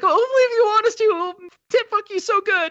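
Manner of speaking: very high, loud, desperate begging voice. Retelling a film scene of a man wanting to be let in: imitating a desperate voice. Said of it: "the desperation in that poor guy's voice".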